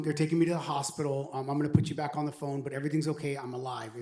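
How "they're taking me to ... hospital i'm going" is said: usual speaking voice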